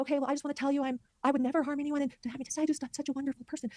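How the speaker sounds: gentle, soft-spoken, slightly high voice. Speaker recounts a man on the stand told to speak up, imitating his soft-spoken tone. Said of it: "this sort of like soft-spoken tone".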